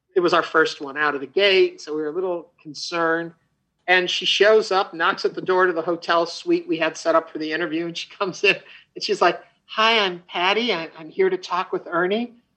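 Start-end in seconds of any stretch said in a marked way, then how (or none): 9.7-12.2 spoken sweetly and gently. Retelling a star's arrival for an interview: sweet gentle Patti LuPone imitation. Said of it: "just so sweet and gentle and funny and warm".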